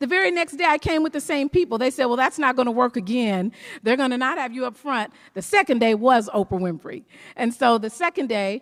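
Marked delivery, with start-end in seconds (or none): none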